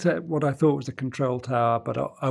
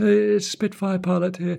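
feeble, high, wimpy little voice; 7 semitones higher than usual. Retelling his phone call to Heathrow control, the speaker puts on a very wimpy voice. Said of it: "it's in a very wimpy voice".

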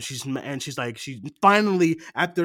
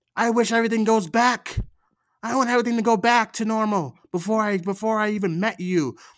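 play-acted crying, high-pitched, screamed outburst; 6 semitones higher than usual. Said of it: "screaming at a box".

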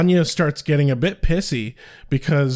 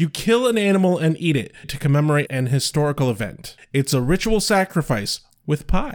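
ordinary talk, nothing marked

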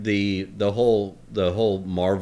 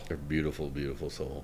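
spooky, eerie, unsettling voice; 6 semitones lower, 12 dB quieter than usual. Praising a woman's beautiful soul: creepy voice. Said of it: "sorry I did that in a creepy voice".

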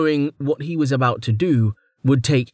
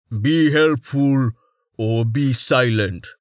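deep, rumbling voice from low down. As the ship shakes, the narrator voices Tallheart answering a screaming Blue Wash, rumbling. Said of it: "Tallheart rumbled".

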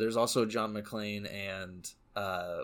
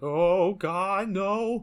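put-on scared tremble, much higher, louder, slower; 10 semitones higher, 9 dB louder than usual. Describing a movie character's slippery fake american accent, imitating a trembling, scared voice. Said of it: "there's that little tremble in there".

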